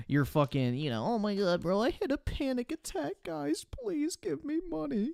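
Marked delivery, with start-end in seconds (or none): 1.1-5.1 sarcastic, mocking, high pleading tone. Mocking a streamer who begs for sympathy donations: mocking imitation begging sympathy. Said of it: "grifting for fucking sympathy donos".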